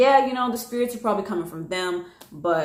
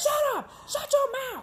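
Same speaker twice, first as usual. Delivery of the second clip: put-on deep, scary, aggressive scream; 5 dB quieter than usual. Retelling a woman screaming in the street: imitating a deep, scary, aggressive scream. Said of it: "deep, scary, aggressive sounding voice".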